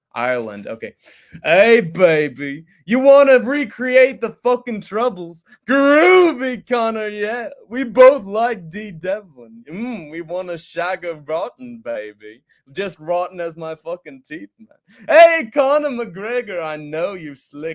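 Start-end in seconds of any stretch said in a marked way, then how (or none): 1.4-17.7 put-on loud calling voice, every baby stretched out long. Someone in the chat asks for a fight call-out to Conor McGregor; do it in an Austin Powers voice. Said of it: "Do Austin Powers calling out Conor McGregor".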